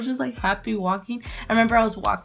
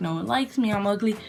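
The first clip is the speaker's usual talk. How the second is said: ordinary delivery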